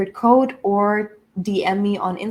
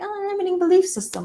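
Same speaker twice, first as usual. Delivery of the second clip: very high, fast, cutesy, breezy, dismissive chirp. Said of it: "it's not that cutesy".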